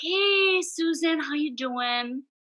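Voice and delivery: sugary sweet, very slow, drawn-out voice. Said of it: "he's much sweeter".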